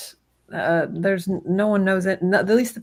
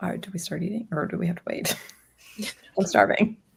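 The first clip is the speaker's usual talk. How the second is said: quick, rushed, breathy whisper under the breath; 5 dB quieter than usual. Playing a character waiting to eat, speaking to Val, whispering. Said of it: "so I whisper next to Val".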